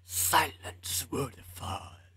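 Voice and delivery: whispered, eerie, creepy alien creature voice. Explaining a Doctor Who reference, attempt an imperfect Silence voice from Doctor Who. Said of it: "I can't do the voice that good".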